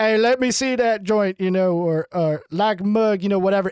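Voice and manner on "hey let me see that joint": put-on rural country accent, laid on thick. Recalling how they talked after moving to Maryland: backwards country accent. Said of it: "that was all you were doing just then".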